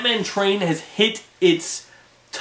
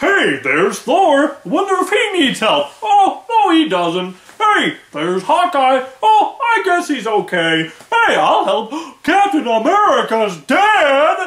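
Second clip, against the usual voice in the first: mock cartoon hero voice, higher and louder; 6 semitones higher, 5 dB louder than usual. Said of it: "everyone sounds like they're putting on a voice".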